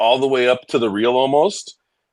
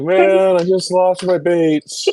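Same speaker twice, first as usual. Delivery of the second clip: very slow, high, sorrowful lamenting voice; 6 semitones higher than usual. Retelling how a friend sounded after losing baits: imitating a sad voice. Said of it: "He was sad".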